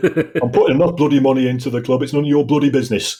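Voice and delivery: put-on loud, gruff, growling Lancashire accent. Retelling what a football club owner said: imitating a gruff Lancashire accent. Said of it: "in a gruff Lancashire accent".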